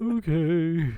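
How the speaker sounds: put-on mournful, high, drawn-out, very sad voice. Playing a genie who gives in and grants the wish: acting a very sad genie. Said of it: "Very, very sad".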